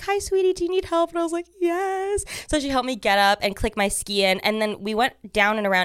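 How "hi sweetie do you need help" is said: very high, sweet, kindly motherly voice. Retelling getting help on the ski slope, a mom offers help: imitating a sweet mom. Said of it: "She was like this really sweet mom".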